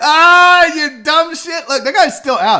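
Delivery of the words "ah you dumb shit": high, loud, mocking, jeering tone. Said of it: "He's like".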